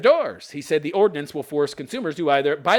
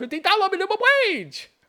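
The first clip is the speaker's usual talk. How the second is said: really bad Chinese accent, very high-pitched. Putting on a voice mid-rant, really bad chinese accent. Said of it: "Why am I doing a Chinese accent?".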